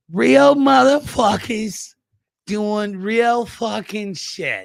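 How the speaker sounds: loud, put-on New Jersey accent, pitched very high. Saying a stock line in a put-on new jersey accent: put-on jersey accent. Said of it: "talk in a Jersey accent".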